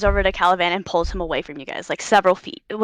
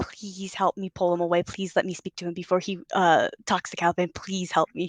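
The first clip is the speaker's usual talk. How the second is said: mouthed whisper, quieter; 8 dB quieter than usual. Voicing a character who begs a player for help: mouthed whisper. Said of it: "whisper mouths you".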